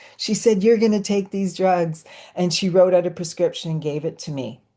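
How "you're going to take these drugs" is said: acted bossy, pushy yelling. Retelling what a psychiatrist said in a session: imitating someone yelling. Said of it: "she actually kinda yelled at me".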